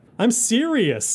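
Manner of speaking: put-on delighted anime laugh. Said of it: "what I'm sure is meant to be a very delighted laugh".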